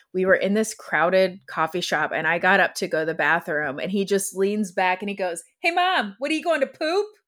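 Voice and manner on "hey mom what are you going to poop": high, loud, cheeky teasing shout. A mother retells her son calling out in a crowded coffee shop, retelling his loud call. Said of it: "he waited till I was like far enough away that everybody would hear it".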